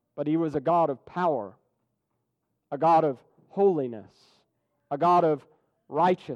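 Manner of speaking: normal talking voice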